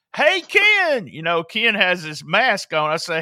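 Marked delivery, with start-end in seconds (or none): 0.2-1.1 put-on yelling, shouted delivery. Retelling calling out to a masked man in the ring: retelling own yell. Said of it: "and I yell".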